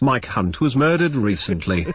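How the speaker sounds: British-accented delivery. Offering to repeat the sentence in another accent, saying it in a British accent. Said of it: "Do you want to hear it in a British accent?".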